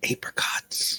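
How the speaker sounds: secretive, hushed, leaned-in whisper. Voicing a character who leans in and tells a secret: whispering. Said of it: "he leans in and whispers".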